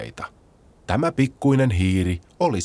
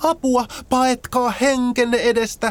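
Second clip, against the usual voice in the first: alarmed, very high, shrill shout. Narrator reads the sparrow as the animals see a huge shadow, shouting. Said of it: "varpunen huusi".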